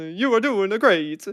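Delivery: put-on worst Italian accent. Voicing a character's line during a game turn: worst Italian accent. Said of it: "It's like the worst Italian accent".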